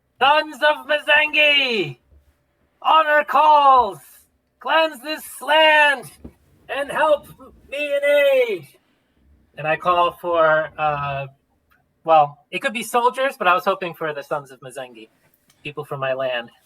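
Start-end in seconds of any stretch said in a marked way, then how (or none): 0.2-8.7 very high, drawn-out rallying battle cry. A player's character holds up a banner and calls for aid, yelling a battle cry. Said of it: "I yell out".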